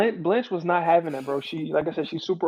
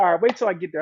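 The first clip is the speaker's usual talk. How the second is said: plain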